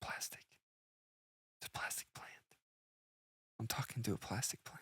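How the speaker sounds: very soft, hushed whisper of realization.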